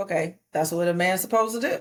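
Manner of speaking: ordinary talk, nothing marked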